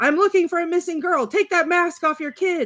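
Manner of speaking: play-acted very high, frantic, unhinged screaming. Recounting a film in which a man devolves into madness, imitating someone screaming. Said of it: "and he's screaming".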